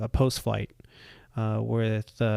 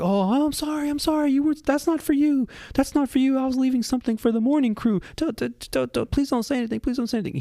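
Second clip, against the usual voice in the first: very high, mortified, embarrassed pleading; 4 dB louder than usual. Retelling how Rob begged the speaker to keep quiet: imitating Rob, embarrassed. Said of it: "He is so embarrassed".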